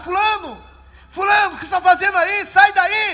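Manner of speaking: put-on loud calling shout. Retelling a vision where one young man calls to another: imitating someone shouting. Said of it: "Aí o outro começou a gritar".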